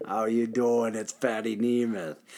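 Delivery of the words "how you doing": mock New Jersey chain smoker voice, quieter. Podcast host recalling a high school classmate, imitating a new jersey chain smoker. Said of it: "a 55-year-old chain smoker from New Jersey".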